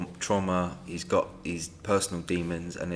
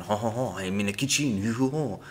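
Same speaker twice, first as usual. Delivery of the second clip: put-on Italian accent; 4 semitones higher than usual. Describing a film scene, in Charlie Sheen's fake Italian accent. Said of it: "doing an Italian accent going".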